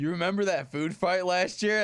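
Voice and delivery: ordinary talk, nothing marked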